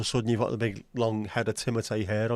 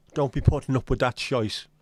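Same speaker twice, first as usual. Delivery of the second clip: caricatured stage Irish accent; 3 semitones higher, 4 dB louder than usual. Speaker catches their own slip into a racist Irish accent. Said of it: "that was me with a racist Irish accent".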